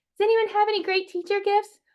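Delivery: very high put-on mom voice. Acting out a post in a moms' craft group: stereotypical mom voice. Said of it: "that's my impression of a mom".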